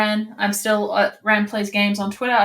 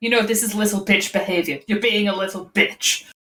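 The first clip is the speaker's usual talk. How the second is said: muttering under one's breath. Voicing Kylan grumbling while he finds his sunglasses: Kylan muttering under his breath. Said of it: "Kylan will say under his breath".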